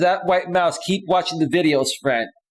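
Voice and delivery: ordinary delivery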